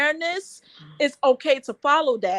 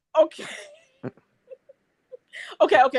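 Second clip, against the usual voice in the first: talking and chuckling through laughter; 3 semitones higher than usual. Asked why he is laughing, answering while laughing while talking. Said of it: "I'll stop laughing".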